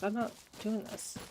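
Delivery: normal talking voice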